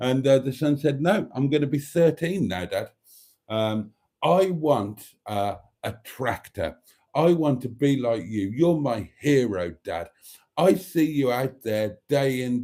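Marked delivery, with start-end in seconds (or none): none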